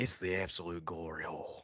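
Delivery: low, dropped put-on voice. Quoting a real remark in an attempted voice: Jerry Jones impression. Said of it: "I'll try to say it in my Jerry voice".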